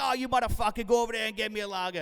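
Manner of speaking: horrible, bad, fake Boston accent. Recalling getting drunk with a friend and ordering drinks, horrible boston accent. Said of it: "Horrible Boston accent".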